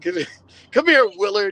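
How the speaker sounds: high-pitched, angry, scolding woman's voice. Imitating a mama who says the whole full name when mad: imitating an angry mother. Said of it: "your mama will say your whole full name and she's mad at you".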